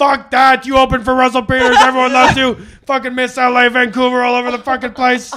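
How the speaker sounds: mock-angry put-on voice. Act out Sean answering a comic who calls himself the backup, in an angry Sean impersonation. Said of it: "I really like your weird ass Sean the Comber impersonation".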